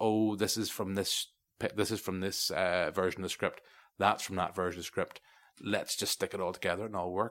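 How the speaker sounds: normal talking voice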